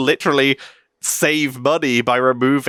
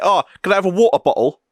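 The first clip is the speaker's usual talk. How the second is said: put-on London-style chav accent, pitched up; 5 semitones higher than usual. Showing what a chav voice sounds like, in a put-on chav voice. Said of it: "chav voice be like".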